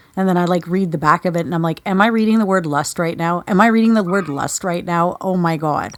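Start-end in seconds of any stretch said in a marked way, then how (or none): none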